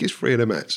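ordinary delivery

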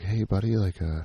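whispering. Retelling asking the husband for a plunger: retelling a whisper.

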